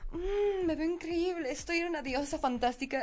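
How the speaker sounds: mock porn moans. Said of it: "esas caras de porno de".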